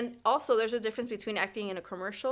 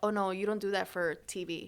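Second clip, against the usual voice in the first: ordinary delivery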